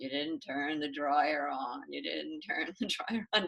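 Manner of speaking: very low, dull, boring droning monotone. Retelling a meditation technique, repeating a thought: imitating own boring voice. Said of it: "in my most boring voice".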